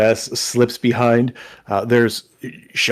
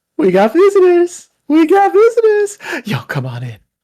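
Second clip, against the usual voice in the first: very high, loud, eager, excited sing-song gnome voice; 6 dB louder than usual. Voicing a grinning gnome barmaid opening the door to visitors: excited gnome barmaid voice. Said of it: "this cute little gnome ... big grin".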